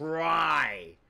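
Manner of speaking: heavy stress on try. Speaker offers to play devil's advocate for someone: stressing the word try. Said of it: "I'm stressing the word try so much".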